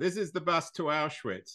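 mild, lightly called announcer-style driver call-out. Retelling what the bus driver calls out as the bus pulls up: imitating a driver shouting. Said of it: "the driver shouts".

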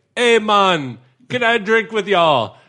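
bad put-on Jamaican accent, shrill, high and loud. Act out a trashed man walking up to a friend's group, in a terrible Jamaican accent. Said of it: "speaking in a terrible Jamaican accent".

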